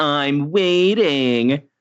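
impatient, fed-up cartoon-hero voice. Quoting a cartoon catchphrase while describing foot tapping: Sonic impression. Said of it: "tapping his foot and going".

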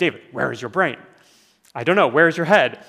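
put-on fast, thick, heavy Eastern European accent. Recalling what a man once asked him, the speaker imitates him: thick Eastern European accent. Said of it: "he had this very thick accent".

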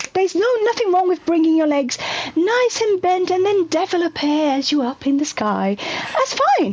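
nice, proper British voice. Giving movement instructions, in a gentle British voice. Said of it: "your perfect best British, nice, gentle voice".

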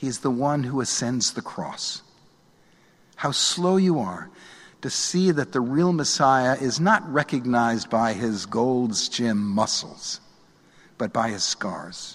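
gentle, compassionate tone, not sarcastic.

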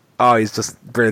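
ordinary talk, nothing marked

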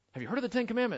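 pitched very high, quizzing tone. Asking about the Ten Commandments in a Ray Comfort impression. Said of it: "I can't do it as fast as Ray Comfort".

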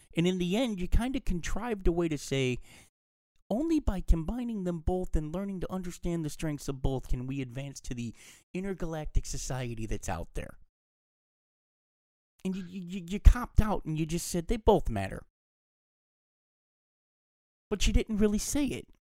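high, hurt, disappointed rant. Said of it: "I said that like I'm really disappointed and hurt by the movie".

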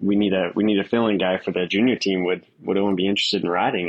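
ordinary delivery

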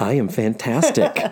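put-on radio announcer voice. Greeting the other speaker to start the show: put-on radio voice. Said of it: "We're using our radio voices".

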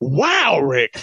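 acted, feigned astonished exclamation. Mimicking a co-host's reaction to a good point: imitating someone acting surprised. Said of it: "acting all surprised".

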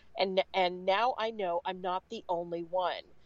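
plain

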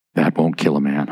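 very low voice. Describing how a man delivers a line, the speaker imitates him, in a lowered voice. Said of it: "he lowers his voice a little bit".

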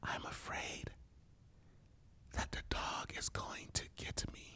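quiet, hushed, barely voiced whisper. Retelling what was said to the wife in the night: retelling a whisper. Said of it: "I whisper to my wife".

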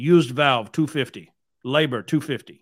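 heavy, thick put-on Eastern European accent. Quoting the guy's prices for a used valve, imitating thick Eastern European accent. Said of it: "really thick Eastern European accent".

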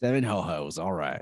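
put-on Texan accent. Giving a guess for the opening weekend, in a put-on Texan voice. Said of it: "I don't know why I'm doing this Texan voice".

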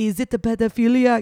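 high, loud, put-on French accent. Retelling the director's answer in an interview, imitating the director's accent. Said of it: "'Cause he had an accent".

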